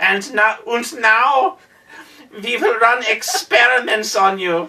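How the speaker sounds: put-on cliché German accent in a mad-scientist voice. Describing the Doctor Insano role, the speaker quotes him in a stereotypical German accent. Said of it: "the stereotypical German accent".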